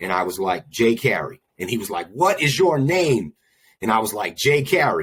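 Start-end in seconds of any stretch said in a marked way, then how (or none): 2.1-3.3 high, demanding, barking put-on cop voice. Recounting a police officer with guns drawn, the speaker retells his yell. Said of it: "And he yelled that 4 or 5 times".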